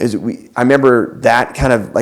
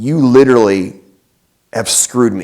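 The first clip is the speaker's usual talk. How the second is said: plain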